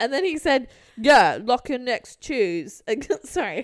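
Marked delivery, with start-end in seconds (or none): 1.0-3.6 imitated, put-on British accent. Retelling what someone said when setting a meeting day, in a put-on british accent. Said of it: "He became British".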